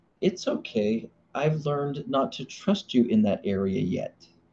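sugary-sweet, gentle, reassuring voice. A husband quoting his wife's phrase to him, imitating her sweetest voice. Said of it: "with the sweetest voice tone".

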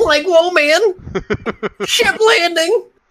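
high-pitched cartoon dog voice. Joking with a friend about recording voices for a game, Scooby-Doo voice. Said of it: "Do your Scooby-Doo".

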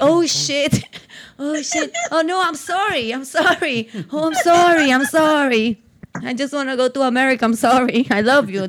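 mock flustered, frantic, drawn-out delivery. Retelling how the boyfriend answers his partner: imitating him apologizing frantically. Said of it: "él hace como que".

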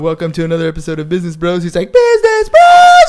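mock buzzed-sounding voice. Retelling a co-host's intro after the third Bud Light: imitating a buzzed friend. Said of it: "Like, a little buzz".

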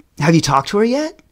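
mock needling, sarcastic, prodding teasing tone. Retelling how their teacher kept teasing them, imitating teacher's sarcasm. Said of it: "And sarcastically".

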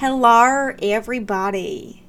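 loud, attempted Australian slipping into Southern accent. Speaker practices an Australian accent, slipping into an accidental Southern accent. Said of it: "that just turned Southern".

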